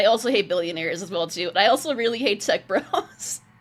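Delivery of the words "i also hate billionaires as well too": usual speaking voice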